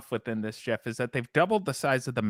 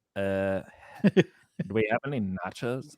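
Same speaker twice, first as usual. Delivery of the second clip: very slow, dopey, dumb cartoon teen drawl; 4 semitones lower than usual. Walking around the kitchen at night with his wife, Beavis and Butthead impersonation. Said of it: "I started going into a Beavis and Butthead impersonation".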